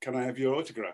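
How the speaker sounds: simple, broken-English phrasing. Retelling a guy on a plane asking for an autograph: broken English. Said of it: "in broken English".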